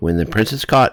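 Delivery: plain reading voice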